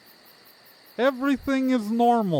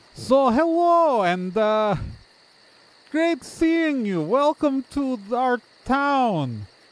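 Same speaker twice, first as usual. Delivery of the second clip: goblin voice, high in pitch, words drawn out slowly. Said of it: "this goblin is waving and approaching".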